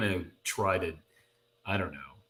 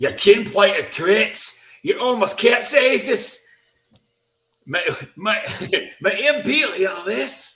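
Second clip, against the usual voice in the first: put-on Scottish fisherman accent, much higher, louder; 12 semitones higher, 9 dB louder than usual. Asked to try it, speaker voices the fisherman in the story: scottish fisherman accent. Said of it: "Do you want to try a Scottish fisherman accent".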